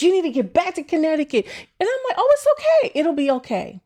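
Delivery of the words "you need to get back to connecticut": frantic, high, rushed, panicked screaming. Retelling your best friend on the phone after your water broke, imitating her screaming. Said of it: "And she's like screaming".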